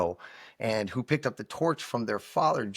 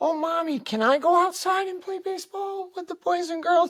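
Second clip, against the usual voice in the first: put-on very high little kid pleading voice, pitched way up; 3 dB louder than usual. Acting out a sick little kid asking his mother to play outside: imitating a little kid asking. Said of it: "he was like that kid that was like".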